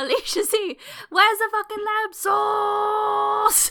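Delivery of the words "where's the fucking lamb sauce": very high, whisper-yelled, hissed shout. Giving listener shout-outs as insults, the speaker does a whisper-yelled Gordon Ramsay impression. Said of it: "I love that you're like whisper yelling".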